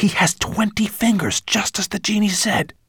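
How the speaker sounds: high, carrying whisper. Reading a story, voicing a character speaking to a companion, half-whispering. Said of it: "whispered Ben".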